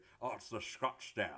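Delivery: put-on slow, drawn-out Scottish accent, done accurately. Speaker recalls how a friend greeted their Scottsdale SUV: Connery accent. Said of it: "in the perfect Connery accent".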